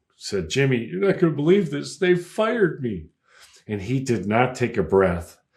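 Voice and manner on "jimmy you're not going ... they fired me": put-on, high, sobbing blurt. Speaker recalls phoning Jimmy after being fired, retelling sobbing. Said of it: "in sobbing".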